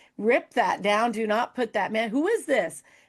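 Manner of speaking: frantic, urgent, unhinged tone. Retelling a phone call to the radio station: retelling own frantic demand. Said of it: "I about lost my mind".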